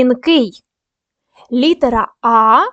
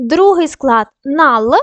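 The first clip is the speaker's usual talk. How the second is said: syllable нал said slowly and set apart. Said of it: "Даємо характеристику кожному складу".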